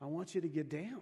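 whispering. Retelling a story of a voice speaking to a praying man: imitating a whisper. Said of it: "he kept hearing the whisper".

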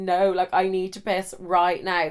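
ordinary delivery

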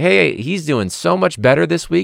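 fake-bright, very high, through gritted teeth. Retelling a follow-up email she sent, acting out fake-smile cheerfulness. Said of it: "that fake smile".

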